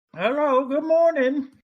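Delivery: very high, pitched-way-up voice. Voicing the oldest woman in town greeting visitors: Ma Hunkle voice. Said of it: "in her voice".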